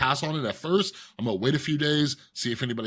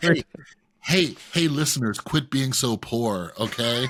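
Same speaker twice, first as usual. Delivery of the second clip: slow, heavily laid-on sarcastic delivery. Jokingly scolding the listeners about being poor: mock sarcastic scolding. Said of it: "that was sarcasm".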